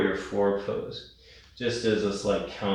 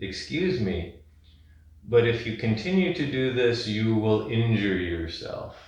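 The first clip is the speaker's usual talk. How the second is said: ordinary delivery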